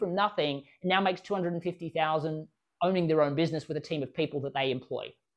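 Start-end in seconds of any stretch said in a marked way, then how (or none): none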